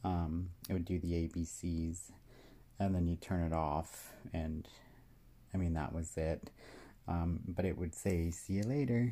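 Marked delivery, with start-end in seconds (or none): 8.3-9.1 put-on little kid's voice, higher pitch. Describing an old toy, imitate its switch-off line in a little kid's voice. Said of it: "in a little kid's voice".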